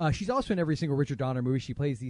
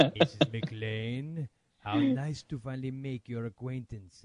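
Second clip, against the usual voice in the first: put-on German accent in villain style; 2 semitones lower than usual. Speaker pretends to be the film's villain for a friend, doing a Hans Gruber impression. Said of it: "Your accents".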